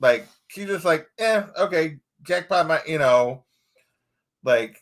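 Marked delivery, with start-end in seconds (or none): none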